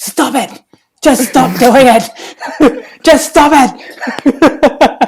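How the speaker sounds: booming, very loud, high, shrill, escalating yell. Retelling a story, the speaker acts out a man telling her to stop, imitating a man getting louder. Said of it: "He's getting louder and louder and louder".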